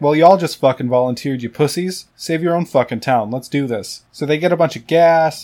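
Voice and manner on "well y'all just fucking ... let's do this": ordinary talk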